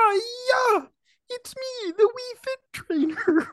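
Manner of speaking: very high puppet voice, hiya drawn out. A little person growing out of the garden introduces itself, Kermit the Frog voice. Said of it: "You sound like Kermweet".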